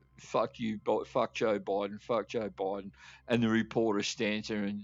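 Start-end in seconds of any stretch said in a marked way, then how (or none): none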